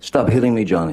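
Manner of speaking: play-acted upset, high-pitched, freaked-out shrieking. Recounting what a woman screamed at a man: imitating a freaked-out scream. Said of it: "she's screaming in her best freaked out, upset voice, high-pitched".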